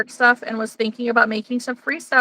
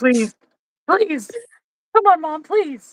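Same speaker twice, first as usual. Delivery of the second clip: put-on swooping, pleading, begging puppy voice; 4 semitones higher than usual. Voicing the excited dog asking mom for something: put-on pleading dog voice. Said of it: "he's like".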